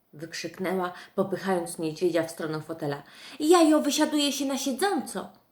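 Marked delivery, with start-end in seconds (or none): 3.4-5.2 reproachful, chiding tone, raised and pitched up. Narrator reads Masha pushing the bear toward the armchair, reproachful. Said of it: "dodała z wyrzutem".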